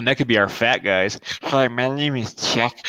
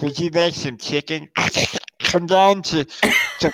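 pitched-up ad-read style voice, snorting mid-word; 5 semitones higher than usual. Pitching a funny commercial voice: snorting while talking. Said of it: "Have him snorting while he's talking".

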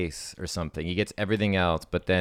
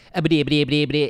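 put-on stuttering cartoon pig voice; 9 semitones higher, 7 dB louder than usual. Answering a request to do a Porky Pig stutter. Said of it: "Can you do it?".

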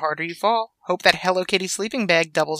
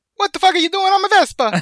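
very high-pitched, over-the-top, crazy Italian accent; 12 semitones higher, 4 dB louder than usual. Imagining the Vespa owner catching them, in a crazy Italian accent. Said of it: "Like that".

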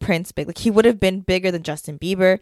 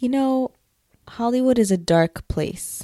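hushed voice, higher; 4 semitones higher than usual. Answering a question about Hollywood and Disney: speaking quietly. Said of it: "Why are you getting so quiet?".

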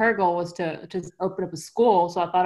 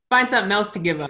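ordinary talk, nothing marked

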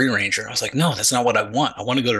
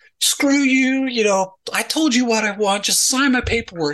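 furious, very high-pitched angry yelling; 11 semitones higher than usual. Speaker, as a PFC, retells yelling at an E7: retelling angry yelling. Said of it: "I start yelling at this E7".

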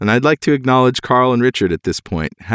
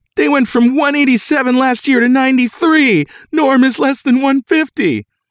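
very high, thrilled, overjoyed excited voice. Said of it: "in a really excited voice".

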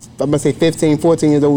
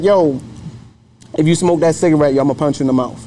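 plain

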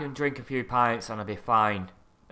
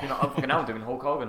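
plain

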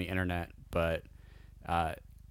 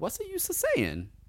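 very high-pitched put-on character voice. On a podcast about the new trilogy, doing a Jar Jar Binks impression. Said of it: "That's my only Jar Jar impression".

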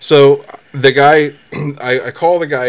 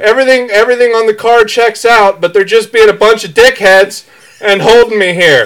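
mock, high-pitched yelling; 8 semitones higher, 4 dB louder than usual. Retelling a call to a boss during a police stop: imitating own yelling into phone. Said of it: "You sound like Randy Marsh".

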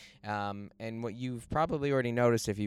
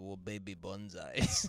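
put-on elderly Japanese man's accent; 3 semitones lower, 6 dB quieter than usual. Retelling what an old man selling bonsai from his van said, in an old Japanese man accent. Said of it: "this old Japanese man who was selling these".

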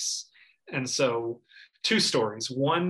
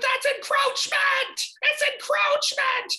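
put-on very high, slow frantic little kid screaming. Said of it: "what I was screaming over and over again was".

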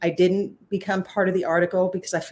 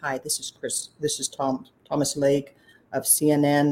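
voice dropped really deep; 3 semitones lower than usual. Retelling an unexpected phone call from a CNN caller: imitating Thomas Lake's deep voice. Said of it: "this really deep voice is".

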